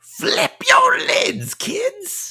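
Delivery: gravelly, very high, very slow and swooping. Doing the Major Sweets voice after being praised for it: gravelly Major Sweets voice. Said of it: "Is it the gravel? ... the gunk in the throat".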